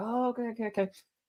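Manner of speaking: soft mutter under the breath. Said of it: "this guy is muttering to himself".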